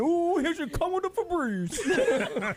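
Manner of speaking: put-on British accent, pitched high. Doing an impression for the others on the show: British Tracy Morgan impression. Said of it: "I'm gonna do the British Tracy Morgan".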